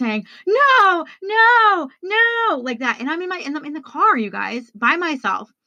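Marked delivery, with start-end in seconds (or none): 0.5-2.6 put-on, shrill, anguished, distraught high-pitched yelling. Retelling being alone in the car after a call about mom, retelling a distraught yell. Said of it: "I start yelling".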